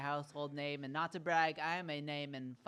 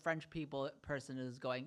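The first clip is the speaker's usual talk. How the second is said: ordinary delivery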